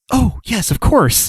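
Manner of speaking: stricken, dismayed, voice very high. Voicing a character who looks stricken when reminded to check on the child: stricken. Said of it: "Apatia looks stricken and goes".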